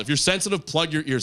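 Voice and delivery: ordinary talk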